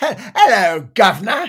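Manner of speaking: loud exaggerated Cockney accent. Showing off a British accent with a greeting, in full cockney accent. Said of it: "Going full cockney on that".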